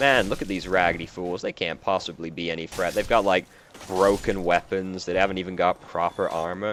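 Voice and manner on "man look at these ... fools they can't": usual speaking voice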